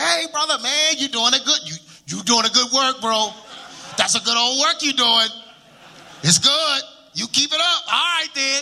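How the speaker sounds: high, chummy, buddy-buddy friendly tone. Retelling what people say to his face when they meet him: imitating people praising him. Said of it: "they always like".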